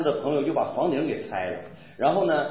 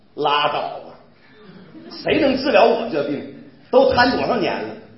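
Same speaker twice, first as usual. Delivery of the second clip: put-on Northeastern Chinese Dongbei dialect accent; 2 semitones higher, 7 dB louder than usual. Retelling how a paralyzed man answers someone telling him about Jesus: Northeastern Chinese dialect. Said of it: "用东北话是怎么回答的".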